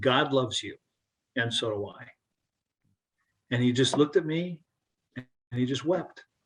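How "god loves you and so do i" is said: soft, hushed stage whisper spoken close. Retelling what was said to someone during a hug: retelling a half-whisper. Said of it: "I just whispered to him".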